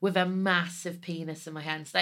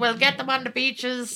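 put-on old British statesman voice, higher and louder; 6 semitones higher, 4 dB louder than usual. Joking about an inner voice that gives orders: Winston Churchill voice. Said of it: "I'm trying to do an impression of".

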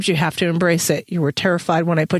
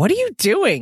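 wary, distrustful, suspicious tone, pitched up; 5 semitones higher than usual. A narrator reads a woman's question to the father, asked suspiciously. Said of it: "She asked suspiciously".

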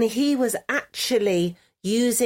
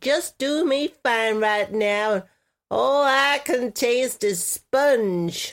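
slow, nasal put-on character voice. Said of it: "I like you in that voice".

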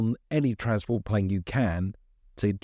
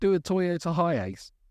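put-on shout, higher; 8 semitones higher than usual. Retelling what a man shouted as he was marched off, retelling a shout. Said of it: "he's just shouted".

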